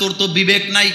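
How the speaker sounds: ordinary talk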